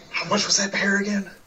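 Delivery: discreet, low-key, very quiet and hushed. Voicing a character asking the bartender a price: very quiet, asking in character. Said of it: "very, very, uh, quietly just kinda asks".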